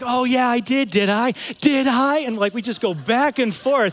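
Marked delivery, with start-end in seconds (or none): 0.1-2.2 slow, drawn-out yelling. Retelling a traffic argument with another driver, the speaker imitates her yelling. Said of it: "she started yelling".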